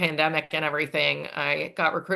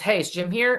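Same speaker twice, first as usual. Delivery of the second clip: put-on angry voice, higher pitched; 4 semitones higher than usual. Retelling how an angry Michael Bennett asked for Jim: imitating angry Michael Bennett. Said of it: "So he is really mad".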